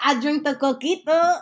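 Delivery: mock Mexican accent, high and loud.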